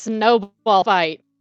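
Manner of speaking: very loud shout, bellowed at full volume. In a role-play game, a character turns to a companion and speaks: very loud. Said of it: "very loudly".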